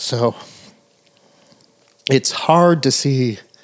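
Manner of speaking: emotion catching, words straining out. Talking to Michelle about a film she pointed out, choked up. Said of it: "I'm getting choked up talking about it".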